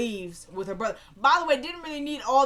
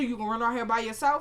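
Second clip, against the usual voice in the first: ordinary talk, nothing marked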